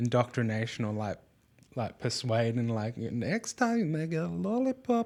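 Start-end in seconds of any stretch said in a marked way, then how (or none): 3.0-5.1 very high, sing-song, swooping put-on German accent. Voicing someone promising a lollipop next time: put-on German accent. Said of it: "I don't know why I'm putting on that accent".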